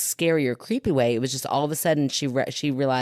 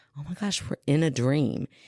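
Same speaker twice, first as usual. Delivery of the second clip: put-on near whisper. Retelling a dream where she tells her friend: imitating an almost-whisper. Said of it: "almost whispered to her friend".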